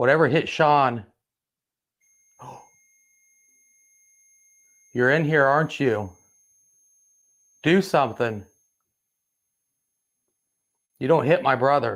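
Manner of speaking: pissed-off, defiant, angry, confrontational tone. Speaker beside a Hope doll, addressing whatever hit their brother Sean, angry. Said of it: "I'm pissed off at whatever hit Sean".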